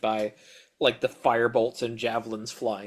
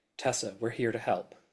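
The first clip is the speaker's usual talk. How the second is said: hushed whisper, much quieter; 4 dB quieter than usual. In a tabletop game, a player's character speaks into a woman's ear: whispering. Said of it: "just whisper in her ear".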